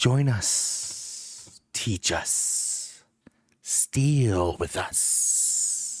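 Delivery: eerie, unsettling whisper, like on the wind. A game master voices a creature speaking to the players in an eerie whisper. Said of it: "that same whisper on the wind".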